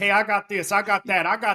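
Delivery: put-on rapid-fire speech. Describing how he pitches his products on the phone, imitating a fast talker. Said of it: "talking a million miles an hour".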